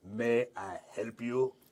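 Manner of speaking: put-on speaking in a Gothic accent. Narrator voicing a character who greets the players, in very accented Gothic. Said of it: "says in very accented Gothic".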